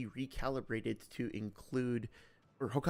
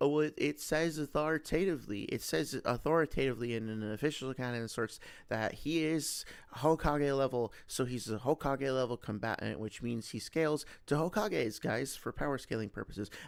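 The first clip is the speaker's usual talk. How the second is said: plain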